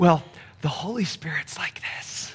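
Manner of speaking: soft, hushed whisper. Imagining their dad whispering it, hushed whisper. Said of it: "I can hear my dad kind of whispering it".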